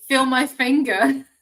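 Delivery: cracking into stifled laughter. Demonstrating a healing phrase you can't keep a straight face saying: laughing while talking. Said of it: "I can't say this with a straight face anymore".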